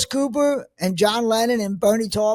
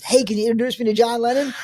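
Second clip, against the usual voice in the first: ordinary talk, nothing marked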